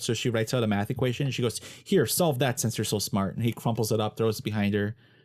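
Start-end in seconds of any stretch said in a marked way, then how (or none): none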